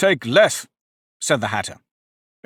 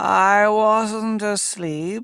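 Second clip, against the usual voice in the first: weak, rasping, hoarse, feeble voice; 4 semitones higher than usual. Reading a story aloud, the Dormouse waking up: hoarse, feeble voice. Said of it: "in a hoarse, feeble voice".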